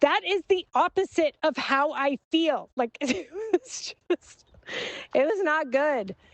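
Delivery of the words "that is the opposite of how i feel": high, very angry voice. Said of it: "in a very angry voice".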